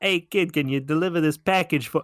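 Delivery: put-on New York accent at an unfamiliar pitch. Acting out a stranger's request to a kid, in a new york accent. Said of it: "a man or a woman with a New York accent ever approaches you and says".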